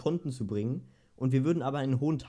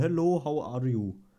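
slow, put-on Indian accent in English. Reading aloud how spam messages always begin, in an indian accent. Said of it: "mein Kopf liest das immer mit diesem indischen Akzent".

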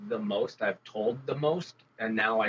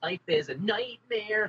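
put-on angsty teenager voice, higher; 11 semitones higher than usual. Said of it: "I bet he'd be an angsty kid".

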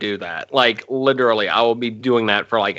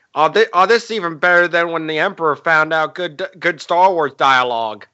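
high-pitched, cartoonish sitcom-style voice; 6 semitones higher than usual. Quoting a Family Guy joke where Peter talks: Peter Griffin voice. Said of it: "you're welcome for the random Family Guy impression".

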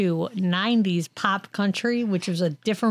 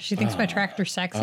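ordinary talk, nothing marked

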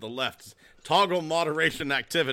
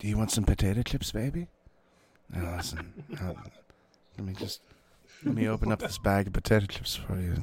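fake ASMR voice, lower pitch; 6 semitones lower than usual. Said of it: "Like a little bit of A S M R".

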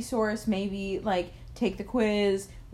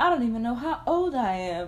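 put-on higher, old-time 1940s widow voice; 3 semitones higher than usual. A podcast host tells of students asking her age: 1940s widow voice. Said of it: "We love a 1940s widow voice".

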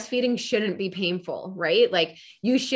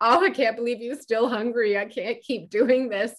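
mock weepy, worn-out, tearful, crying voice; 3 semitones higher than usual. Retelling what was said to a husband in the kitchen: retelling words said while crying. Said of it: "just crying to my husband".

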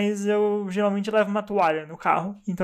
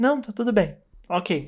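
mock dry, curt, flat delivery, slower. Imitating someone's answer after you've done something wrong, imitating a dry, flat reply. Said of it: "E ela fala seca".

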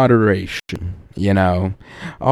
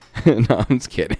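plain

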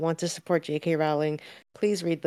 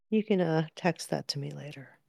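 hushed whisper, much quieter; 5 dB quieter than usual. Asking the other speaker to text it later, whispering. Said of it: "Why are we whispering?".

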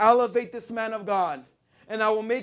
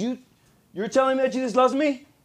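put-on angry voice, stumbling over words; 2 semitones higher than usual. Retelling a mechanic's reply to a friend: imitating someone getting mad. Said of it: "And he starts getting mad".

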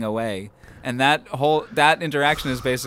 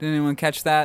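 ordinary delivery

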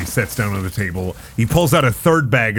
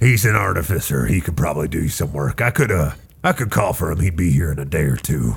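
gruff dwarf voice, pitched lower; 6 semitones lower than usual. Game master voicing a dwarf blacksmith talking to the players, gruff dwarf voice. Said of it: "and a gruff dwarf with a very long gray beard and blonde eyebrows".

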